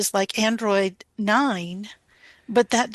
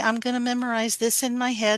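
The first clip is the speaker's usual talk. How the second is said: ordinary delivery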